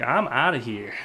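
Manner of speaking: plain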